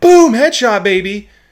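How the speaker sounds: booming, shrill, very loud, high-pitched shout. Demonstrating a microphone's gain control by suddenly shouting, loud gamer shout. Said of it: "but then you start".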